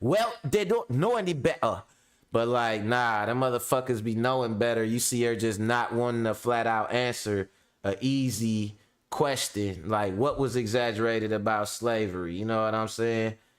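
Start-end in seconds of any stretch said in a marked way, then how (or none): 0.0-1.8 put-on English accent for a laugh, pitched higher. Mocking a common excuse, in King Richard's English accent. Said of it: "King Richard's English accent".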